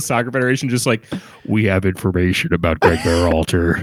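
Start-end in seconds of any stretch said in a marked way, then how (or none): 1.5-3.8 low, disguised voice masked by a modulator. Speaker acts out Claudio Reyna calling the U.S. Soccer Federation through a voice modulator. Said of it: "using a voice modulator".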